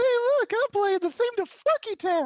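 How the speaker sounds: very high, very loud belted character voice. Doing an impression of Towelie after another speaker asks for it: Towelie voice. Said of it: "Do your impression of Towelie again".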